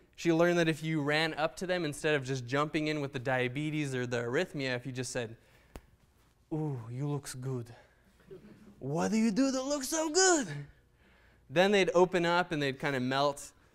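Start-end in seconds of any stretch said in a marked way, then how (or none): 6.5-10.5 heavy put-on Russian accent, thick and sing-song. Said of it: "overweight Russian lady with a thick accent".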